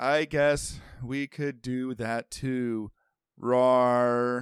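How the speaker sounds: mimicked flat monotone, half-hearted, zero energy. Imitating how she says the line with no energy, mimicking a flat monotone. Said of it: "It's so like monotone".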